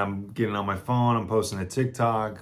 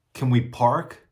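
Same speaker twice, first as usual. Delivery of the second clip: put-on loud, aggressive, very upset, pushy tone; 4 semitones higher, 5 dB louder than usual. Retelling a man who crouched to look through the window; mock-aggressive, upset. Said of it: "like just very aggressive, very upset".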